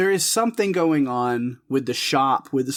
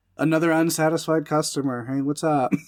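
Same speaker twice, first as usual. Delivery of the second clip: normal talking voice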